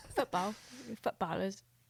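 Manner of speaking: clumsy, bad, fake put-on European accent. Showing how people in Europe say the word: bad European accent. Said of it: "That was a worse accent".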